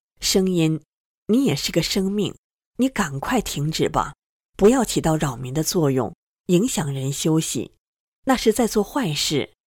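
ordinary delivery

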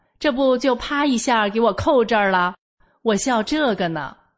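ordinary talk

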